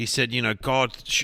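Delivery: ordinary delivery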